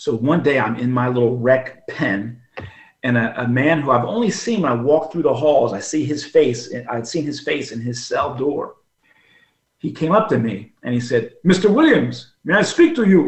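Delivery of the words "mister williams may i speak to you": put-on very thick Nigerian accent, high and swooping. Retelling a man's request to speak with him, in a thick Nigerian accent. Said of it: "he had this very thick Nigerian accent".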